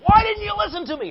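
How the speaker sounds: high, loud angry yell. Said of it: "He's yelling at me".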